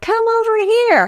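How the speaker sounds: meek, unassertive, timid voice, very high pitched.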